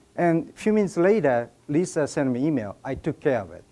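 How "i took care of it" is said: low, quiet, menacing mob boss voice. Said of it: "it sounded like, you know, Sopranos".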